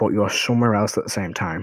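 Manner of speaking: ordinary delivery, nothing marked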